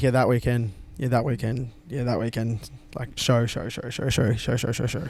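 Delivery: plain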